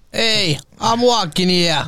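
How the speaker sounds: put-on New York accent. Speaker showing how a new york accent would go, in a new york accent. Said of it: "New York accent".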